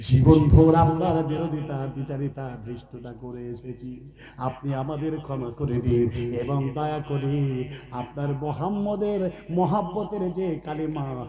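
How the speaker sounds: low, soft, sobbing, pleading tone.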